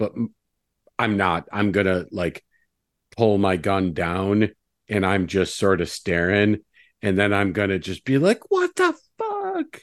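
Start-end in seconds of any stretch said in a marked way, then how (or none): 8.5-9.8 very high voice, freaking out a little. Speaker acting out his own reaction after lowering his gun, acting out freaking out a little. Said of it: "So I'm like freaking out a little bit".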